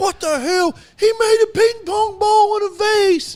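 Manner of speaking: piercing, shrieking scream, very high pitched. Retelling a late-night scream from the bedroom over a trick shot: imitating someone screaming. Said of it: "Come screaming".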